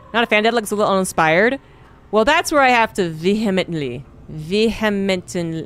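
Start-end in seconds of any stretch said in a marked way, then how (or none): 2.3-5.7 slow, careful delivery, each word deliberately drawn out. Trying to pronounce a hard word, saying it slowly. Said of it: "I can't say that slowly".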